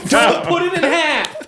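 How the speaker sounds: put-on very high-pitched shrieking yell. Retelling how a son burst in and yelled about a sandwich: imitating a son yelling. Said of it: "starts yelling at her".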